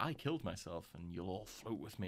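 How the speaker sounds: furious, vengeful, angry delivery. Retelling a film scene where a dead character threatens the group: imitating an angry voice. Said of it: "angry and stuff".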